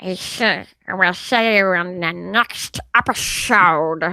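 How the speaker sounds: very slow, low, drawn-out cartoon duck and alien voice. Saying goodbye at the end of the episode with the stuffies: Donald Duck and Stitch cross. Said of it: "a cross between Donald and Stitch".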